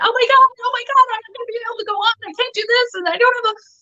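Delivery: high, fast, panicky voice. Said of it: "Most people would be panicking, going".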